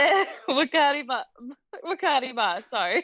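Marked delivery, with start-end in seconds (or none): 0.0-1.2 giggling, laughing mid-word, breaking off. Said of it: "what's so funny over there".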